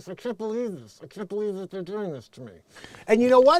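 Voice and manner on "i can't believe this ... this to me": quiet, acted speech squeezed through a locked jaw. Describing an assault victim, imitating her talking with a lockjaw. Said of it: "she's talking like this".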